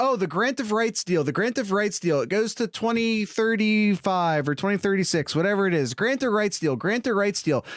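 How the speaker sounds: normal talking voice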